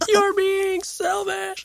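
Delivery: play-acted, shrill, very high, accusing child's screech. A parent retells a boy screaming at their daughter over her bike: imitating a child screaming. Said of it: "and he's screaming at her".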